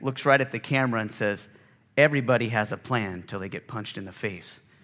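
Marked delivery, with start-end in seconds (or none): 2.0-4.6 low, totally deadpan delivery. Retelling a boxer's answer to a sportscaster's question: deadpan Mike Tyson delivery. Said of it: "And Mike just deadpans it".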